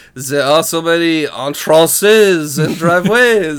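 put-on heavy, hard French accent. Quoting how a man says entrances and driveways: hard French accent. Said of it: "Hard French accent here".

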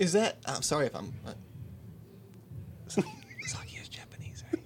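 high-pitched whisper. Speaking into the mic, not wanting anybody else to hear: whispering. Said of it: "I like that you are whispering into the mic".

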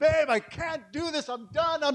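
put-on crying. Retelling their own words to her in the restroom, retelling weeping. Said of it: "And I'm just weeping".

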